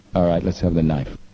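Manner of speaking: ordinary talk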